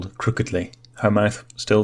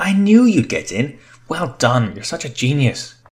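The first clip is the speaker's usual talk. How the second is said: lively, animated, bouncing exclamation with high swooping pitch; 5 semitones higher than usual. [name] hears that Sophia got in and responds: animated exclamation. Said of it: "[name] exclaimed animatedly".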